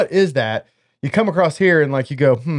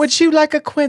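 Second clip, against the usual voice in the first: very high, prim, proper, put-on posh British accent; 13 semitones higher than usual. Joking about the word quince, mock proper British accent. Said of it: "going like fucking with the British folks".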